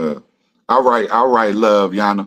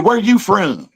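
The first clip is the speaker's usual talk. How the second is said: put-on very high-pitched, pushy, aggressive country accent; 12 semitones higher than usual. Telling a childhood story about a girl who walked up aggressively, imitating her aggressive country voice. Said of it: "with a country voice".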